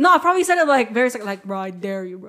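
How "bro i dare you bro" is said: acted threatening, much quieter, lower. Retelling how they dared a guy, in a mock-threatening tone. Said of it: "like you're threatening him".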